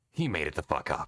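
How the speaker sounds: swooping, animated, wildly swinging bad character voice. Answering where the senator heard it, in a Snake impression. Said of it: "my snake sounds a little bit like Raiden".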